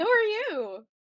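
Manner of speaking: very high-pitched Christmas-elf voice. Retelling a question to a stranger in line: Buddy the Elf voice. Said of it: "You said it like Buddy the Elf would have said it".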